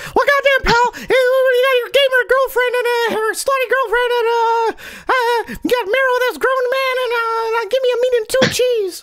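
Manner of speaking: very high, halting rambling delivery. Redoing a quoted remark as Jim Cornette would say it: Jim Cornette voice. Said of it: "redo that in Cornette's voice".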